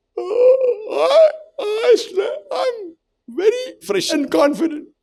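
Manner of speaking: very high, yawn-stretched words, oh dragged out. Showing that body language outweighs words, yawning while speaking. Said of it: "I'm yawning and I'm saying".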